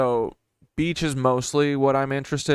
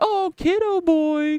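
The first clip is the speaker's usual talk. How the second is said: squeaky, very high pet-talk voice; 3 dB louder than usual. Retelling talking to a cat while petting it: high-pitched voice to pets. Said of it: "'cause I was talking to high voice to them".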